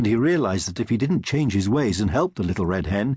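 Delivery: ordinary delivery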